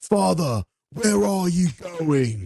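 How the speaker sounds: very high, stilted bad acting, Australian accent slipping through. Asked to imitate a bad actor, imitating his Australian accent slipping through. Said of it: "can you try to imitate him?".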